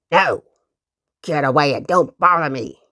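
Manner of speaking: most unpleasant, nasty growl. Uncle Wiggily knocks asking for work, and a voice answers: growling unpleasant voice. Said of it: "growled a most unpleasant voice".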